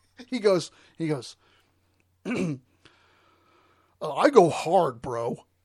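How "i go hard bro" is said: put-on voice of a grown man around forty. Retell what a 40-year-old said the other day, imitating a grown man's voice. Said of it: "I'm going to try to do it in his voice".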